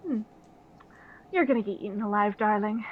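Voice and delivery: lightly amused, teasing, knowing delivery. Voicing the bard who grins at a player: grinning while speaking. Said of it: "she grins at you and is like".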